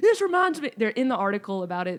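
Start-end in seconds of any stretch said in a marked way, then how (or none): 0.0-0.7 very high-pitched shrill yell. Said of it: "a veteran yelling at me like".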